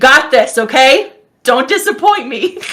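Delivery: encouraging, rallying, called-out delivery. A character looks out at Ari and Leon, giving them a shout. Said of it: "kind of gives them a shout".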